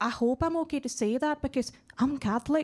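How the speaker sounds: put-on quiet whisper. Retelling what a colleague quietly said about Saint Paddy's Day: imitating a colleague whispering. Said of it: "she quietly whispers and says".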